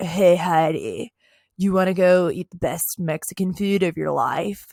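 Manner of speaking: put-on light, slight California accent. Talking about a man on a show, speaker imitates Spencer's California accent. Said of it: "his little California accent where he's like".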